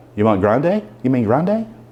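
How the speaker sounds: ordinary talk, nothing marked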